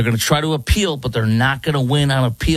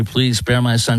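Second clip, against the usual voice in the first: put-on tearful pleading tone. Retelling a mother's plea to the jury: imitating a mother pleading. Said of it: "mom last night was pleading".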